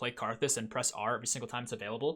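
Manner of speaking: normal talking voice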